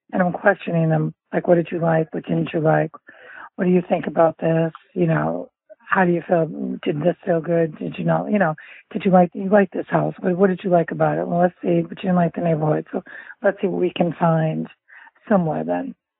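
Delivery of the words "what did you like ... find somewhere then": ordinary talk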